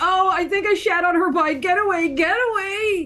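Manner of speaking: frantic, high-pitched, panicked screaming bird voice. Voicing a bird character in a scene with other players: screaming bird. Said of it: "they're screaming at this point".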